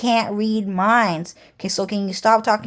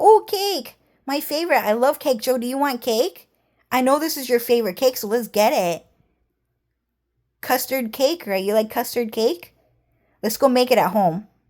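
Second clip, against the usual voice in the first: cute anime-style character voice; 4 semitones higher than usual. Retelling how a coworker acted out a cute anime character: imitating Jenny doing Honey Senpai. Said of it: "a bunch of honey senpai things".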